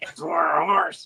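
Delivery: horsey, animal-like voice. Telling a story, she says the line in a horse voice. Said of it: "she says it with a horse voice".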